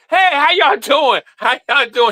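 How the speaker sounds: very high-pitched, put-on, fake friendly voice. Mocking the co-host for ignoring her: imitating co-host's fake greeting. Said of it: "She be doing this like".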